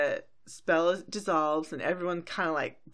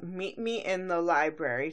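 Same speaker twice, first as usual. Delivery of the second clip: normal talking voice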